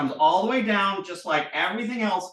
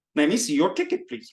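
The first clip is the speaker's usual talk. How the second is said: over-the-top, goofy, exaggerated put-on Indian accent. Showing the classic imitation people do, in a goofy exaggerated indian accent. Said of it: "enough of my goofy Indian accent".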